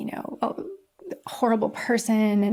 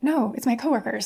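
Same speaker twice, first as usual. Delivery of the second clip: acted-out, panicked, flustered voice. Retelling being caught with a puppy, the speaker replays their own reply, acting out panic. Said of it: "I'm like panicking".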